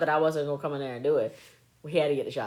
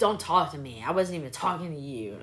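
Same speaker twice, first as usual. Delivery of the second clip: put-on angry, mad boy voice. Retelling a boy being mean to his mama: imitating an angry boy. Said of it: "He was so mad".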